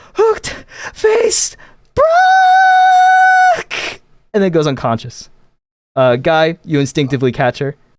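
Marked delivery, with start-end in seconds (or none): 0.2-4.0 very high, shrill, full-lung scream with stretched word. Voicing a character meeting a towering robot: screaming at the top of her lungs. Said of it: "screams at the top of her lungs".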